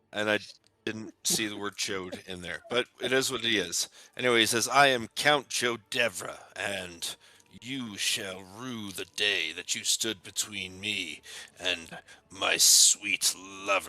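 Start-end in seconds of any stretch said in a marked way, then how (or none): 4.7-13.9 put-on creepy character voice, slower. Acting out what the character says: put-on creepy Count Chodevra voice. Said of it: "Why does he say that in such a creepy way?".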